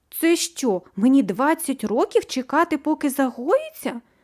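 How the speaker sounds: frightened, fearful, high-pitched voice. A girl whose scrape was just bandaged asks, frightened question. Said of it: "Перелякано запитала Аліса".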